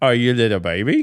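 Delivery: put-on baby talk. Showing how to talk to a dog acting like a baby: baby talk to a dog. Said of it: "it's being a baby".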